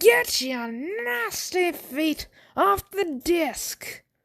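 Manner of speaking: fake Irish accent, very high pitch, slow pace. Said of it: "Was that still an Irish voice or was that supposed to be a Texan voice".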